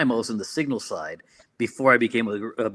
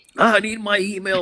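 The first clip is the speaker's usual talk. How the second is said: put-on very high, loud yelling voice; 10 semitones higher, 5 dB louder than usual. Retelling how a general demanded his email: imitating a general yelling. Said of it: "some generals just yelling".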